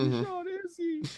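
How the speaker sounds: tearful, very high-pitched, loud sobbing wail. Retelling a show scene where a character cries, imitating someone crying. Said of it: "he's all crying after Izzy got shot".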